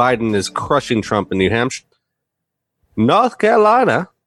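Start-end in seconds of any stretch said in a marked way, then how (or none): 3.0-4.0 high, fake North Carolina accent. Reading out states during election results: put-on North Carolinian accent. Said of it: "I just wanted to talk like a North Carolinian".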